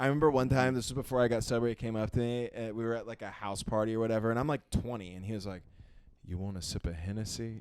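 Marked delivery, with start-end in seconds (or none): 6.3-7.6 low, cool, smooth jazz-man delivery. Retelling a jazz musician offering a drink at a house party, imitating a smooth cool voice. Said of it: "he's like the smoothest".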